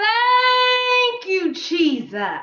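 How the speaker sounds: even bigger, very high, loud, drawn-out shout. Leading the group's second, louder try at the count: shouting thank you even louder. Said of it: "I know you can get louder than that".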